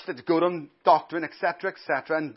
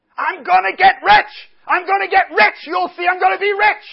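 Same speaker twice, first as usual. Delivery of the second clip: very high, very loud, shrill, ear-splitting scream; 13 semitones higher, 9 dB louder than usual. Retelling what a man shouted at the front: imitating a man screaming. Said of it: "what he was screaming in the end".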